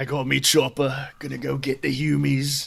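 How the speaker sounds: put-on deepened voice. Practicing a character voice: attempted deeper voice. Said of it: "try to make my voice deeper".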